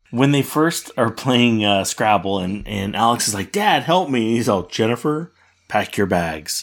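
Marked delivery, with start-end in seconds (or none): 4.6-6.6 put-on bone-dry, matter-of-fact, dead straight delivery, no reaction. Fan recounting a Scrabble scene, quoting the dad to Jennifer; retelling a deadpan line. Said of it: "And he's just so deadpan".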